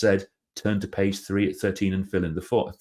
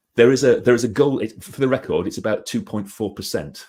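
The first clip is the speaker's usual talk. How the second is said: plain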